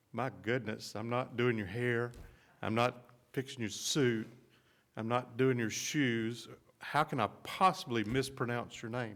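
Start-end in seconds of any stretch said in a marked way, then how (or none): none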